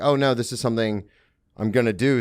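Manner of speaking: ordinary delivery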